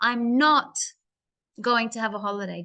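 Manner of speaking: "not" pushed hard, the rest of the words softened. Showing how to push the negative in a sentence, stress on 'not'. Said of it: "Do you see how I pushed that and then I then I softened my voice for the rest of the sentence?".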